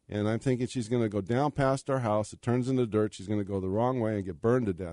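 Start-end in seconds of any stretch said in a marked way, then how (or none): none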